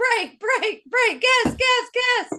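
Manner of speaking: high, sing-song calling out.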